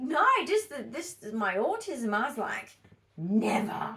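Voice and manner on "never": mock sinister villain voice. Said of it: "Why does that sound like the voice of Voldemort".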